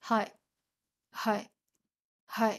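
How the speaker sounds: flat deadpan monotone with no feeling at all. Explaining a Japanese phrase, showing an anime character replying with no emotion. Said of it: "like no emotion".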